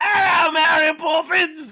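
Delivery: very high, very loud, shrill put-on shouting voice.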